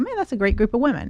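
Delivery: ordinary talk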